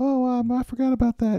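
put-on very high small-child voice. Speaker acts out a kid answering after the other kid lays out the case, Johnny voice. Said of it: "how do you like my Johnny voice?".

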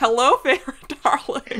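very loud high ogre voice. Joking in conversation about funny voices, doing the Shrek voice. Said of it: "The Shrek voice".

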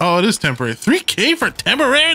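angry, exasperated. Player reacting to a $3,000 in-game power-up being temporary, angry and exasperated. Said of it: "you sound like you're angry".

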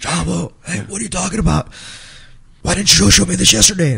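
high, raspy, scratchy, creaky put-on voice. Retelling a conversation, quoting Johnny's reply in Johnny's voice. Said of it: "with his Johnny voice".

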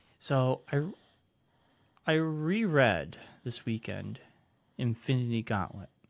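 soft-spoken, talking softly in a soft voice. Telling the other speaker about rereading a comic over the weekend, talking softly. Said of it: "Why are you talking so softly?".

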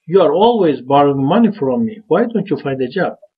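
slightly angry, irritated, a little annoyed. Example sentence showing how tone matters: slightly angry. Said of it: "So we just little, you know, angry. We say".

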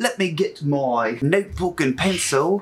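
fake British accent, played professional and polished. A youtuber starting a storyline video on their channel, in a put-on british accent. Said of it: "my mind went British".

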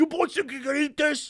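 put-on old Italian man voice. Retelling how a pizza maker questioned two gym bros, imitating an old Italian man. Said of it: "the dude seemed like an old Italian man".

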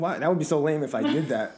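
plain

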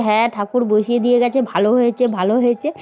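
normal talking voice

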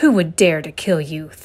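thundering, booming, roaring voice. Narrator reads the king answering Esther's request for protection, thundered. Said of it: "thundered the king".

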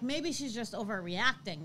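plain

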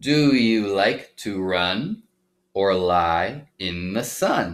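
very slow, smooth phrasing with words gliding unbroken. Reading a sentence with Baby Echo gliding rather than hopping: words flowing smoothly together. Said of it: "I sort of connected the words together and it all went more smoothly".

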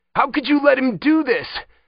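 very high, loud, fear-twisted panicked outburst. Kevin answers Wymack back, voice twisted with fear and panic. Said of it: "Kevin's voice was twisted with fear and panic".

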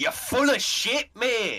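very loud fake Scottish accent. Joking about a mod replacing the narrator woman: put-on scottish accent. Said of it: "with, like, a Scottish guy. He just goes".

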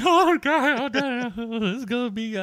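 mock weepy, tearful, high, swooping, crying-through-it voice. Retelling own reaction to a movie trailer: imitating own crying. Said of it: "I was crying during the trailer".

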